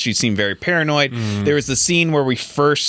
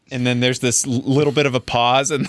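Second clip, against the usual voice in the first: ordinary talk, nothing marked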